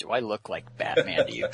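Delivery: quiet, stern put-on superhero voice.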